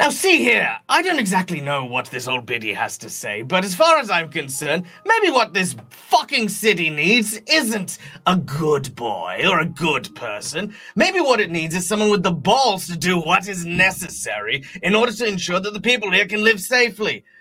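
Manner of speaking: biting, sharp, harsh cutting tone. Voicing a character whose voice suddenly turns sharp, scolding a parent: sharp voice. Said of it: "Basil's voice immediately turns sharp".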